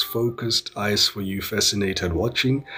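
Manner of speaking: ordinary talk, nothing marked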